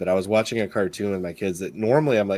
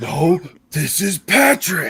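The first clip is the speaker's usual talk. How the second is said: very slow, very high, loud, drawn-out cartoon voice; 9 semitones higher, 6 dB louder than usual. Answering another speaker who said Patrick: Patrick Star voice. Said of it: "the starfish from SpongeBob going".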